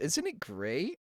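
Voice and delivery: sarcastic, mock-enthusiastic fake delight meaning the opposite. Complaining with others about college fees, sarcastic. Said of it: "I'm being sarcastic".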